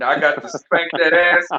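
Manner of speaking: fake threatening tone, loud.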